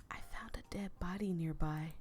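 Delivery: slow hushed whisper. A narrator speaking to her, in a low slow whisper. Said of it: "lowered my voice and slowly whispered".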